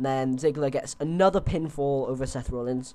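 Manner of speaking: normal talking voice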